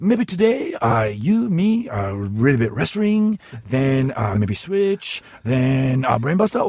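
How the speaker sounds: put-on Japanese-accented voice. Asked what the Liger voice is, doing it: Liger voice. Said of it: "Liger's voice is like".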